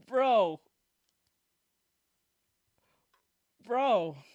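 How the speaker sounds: talking through stifled laughter. Reacting to a clip, trying not to laugh: laughing while talking. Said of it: "I'm trying not to laugh".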